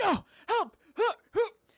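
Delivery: mock very high, frantic, loud, gasping, panicked pleading. Retelling a movie's cliff scene, imitating Elijah Wood's panicked plea. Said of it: "Elijah's like".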